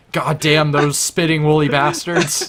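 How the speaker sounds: hollering rant at full volume. Retelling what a friend's brother started shouting: imitating someone shouting. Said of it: "he started shouting Islamophobic stuff".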